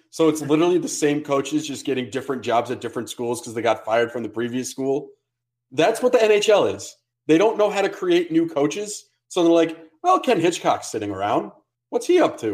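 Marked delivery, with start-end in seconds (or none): 10.0-12.5 put-on sing-song Canadian accent. Imitating NHL decision-makers wondering about an idle coach, in a Canadian accent impression. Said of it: "great Canadian accent".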